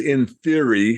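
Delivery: stress on "in theory".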